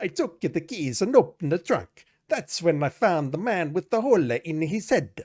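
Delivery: put-on loud, heavy Italian accent. Gillespie continues explaining to the listening player, in his heavy Italian accent. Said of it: "In his heavy Italian accent".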